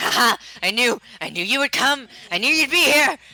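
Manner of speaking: loud, high-pitched scream. Narrating a game, the speaker voices the character Luna screaming. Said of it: "Luna's just like screaming like".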